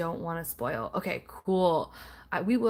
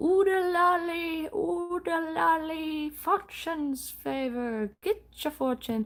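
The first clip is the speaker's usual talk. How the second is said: very high, drawn-out cartoon fortune-teller voice; 11 semitones higher than usual. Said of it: "Please compliment my impersonation of that".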